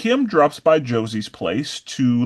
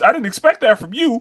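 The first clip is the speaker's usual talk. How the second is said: put-on taunting voice, higher and louder; 10 semitones higher, 5 dB louder than usual. Retelling what a coach says to a fighter taking a breather: imitating the coach. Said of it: "the coach is like".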